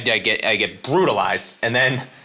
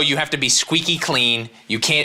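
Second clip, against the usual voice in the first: ordinary talk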